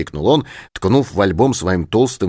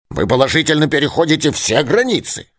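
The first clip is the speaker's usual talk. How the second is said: cranky, pitched-up grumbling; 7 semitones higher than usual. Answering the narrator's theory, the professor replies grumbling. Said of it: "проворчал он".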